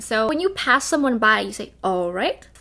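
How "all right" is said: "all right" with the tune climbing on "right". Showing what you say passing someone by, rising pitch on all right. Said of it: "like that, like it always goes up".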